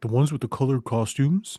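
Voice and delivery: put-on dumb-sounding, clueless voice. Retelling how Jason plays dumb about the superheroes: Jason voice. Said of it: "That's my Jason voice".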